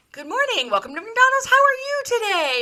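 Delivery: put-on very high, fast, over-the-top super-excited friendliness. Retelling a drive-thru worker's greeting: imitating someone super excited. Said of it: "super excited".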